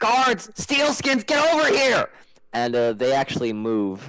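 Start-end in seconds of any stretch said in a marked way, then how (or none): 0.0-2.1 very high, shrill, loud screamed delivery. Voicing a character who calls the guards over: screaming. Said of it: "he screams".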